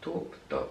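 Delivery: voice cracking and giving out into a faint whisper.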